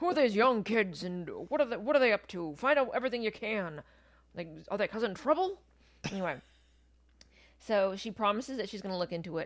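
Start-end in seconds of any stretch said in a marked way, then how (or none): 0.0-5.6 loud, pushy, demanding, rapid-fire forceful voice. Recapping a scene, the speaker voices the editor: J. Jonah Jameson impersonation. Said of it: "That's my J. Jonah Jameson impersonation".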